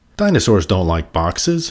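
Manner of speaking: ordinary delivery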